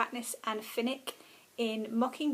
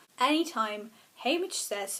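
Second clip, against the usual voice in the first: normal talking voice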